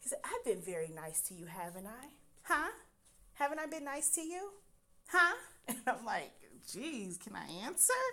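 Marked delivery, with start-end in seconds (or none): 0.2-5.3 calm, condescending, patronizing tone, pitched higher. Recounting what a man said when the speaker disagreed: mimicking a calm, condescending voice. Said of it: "calm, condescending voice".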